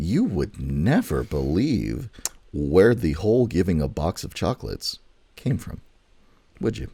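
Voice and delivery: totally sarcastic, teasing tone with mock disbelief. Speaking to co-host Joshua in front of the audience, with complete sarcasm. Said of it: "I'm going to say this with complete sarcasm".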